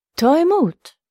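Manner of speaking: calling out, pitched very high. Reading a rider slowing his pony and calling out to a girl.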